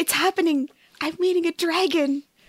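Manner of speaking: hushed, quiet stage whisper. In a role-play as Keela, turning aside to Maypri: really quiet aside. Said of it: "really quietly say".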